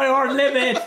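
put-on Cornish accent. Retelling what an old man shouted from a window: imitating an old Cornish man. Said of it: "some old boy probably stuck his head out the window and went".

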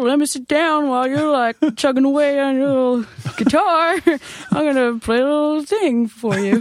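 put-on guitar riff guy voice, very high. Describing a guitarist riffing around while others play, in a riff guy voice. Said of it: "That's my riff guy voice".

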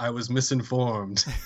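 put-on flat, bone-dry, expressionless deadpan delivery. Retelling a Casablanca scene, speaker gives Bogart's reply: retelling Bogart's deadpan. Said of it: "he just deadpans".

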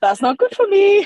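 very high, shrill, loud voice. Impersonating a friend saying a line in a very high-pitched voice. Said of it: "Lindsay doing an impression of our good friend".

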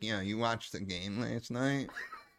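rough, rasping junkie voice. Acting out a junkie asking about the game: raspy junkie voice. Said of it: "our go-to thing was like".

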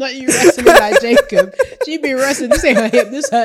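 loud, high-pitched, giggly laughing tease.

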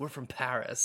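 put-on English accent. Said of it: "speaking with English accents".

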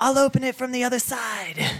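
shrill, loud, full-throated yell. Stepping outside as a door slams, calling back to others: yelling. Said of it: "I yell".

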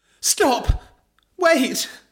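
very high, shrill calling-out yell. Voicing a character running towards others in a comic story: shouting. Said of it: "Belinda shouted as she ran".

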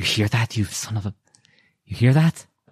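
words forced out between clenched, gritted teeth. A character looks out at the wall of mist and speaks through gritted teeth. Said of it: "just through gritted teeth".

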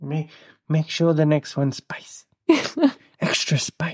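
put-on slightly drunk, tipsy voice. Speaker recounts a friend ordering spicy margaritas, imitating a friend at drinks. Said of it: "doing that voice".

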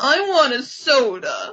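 whiniest voice, very slow, sing-song, every word stretched. Recapping a scene where Pizzazz answers Eric; whiny Pizzazz voice. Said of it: "in the whiniest voice ever".

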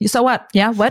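ordinary delivery

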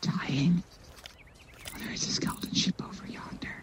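whispering.

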